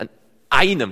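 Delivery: einem stressed, hit hard and loud.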